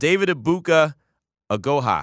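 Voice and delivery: slow, deliberate, painstaking pronunciation of a name. On the show, the host names a player he might mispronounce; saying a name slowly. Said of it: "I had to say it slow".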